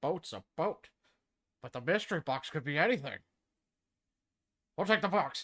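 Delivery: rough, not-great put-on cartoon dad voice. Trying one more impression line, the speaker does an attempted Peter Griffin voice. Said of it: "I'll do one more".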